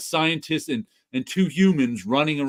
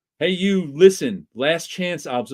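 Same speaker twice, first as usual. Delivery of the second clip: ordinary talk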